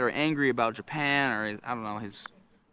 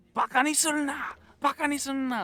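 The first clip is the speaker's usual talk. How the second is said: play-acted shrill, high-pitched screaming in Japanese; 12 semitones higher than usual. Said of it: "he's screaming".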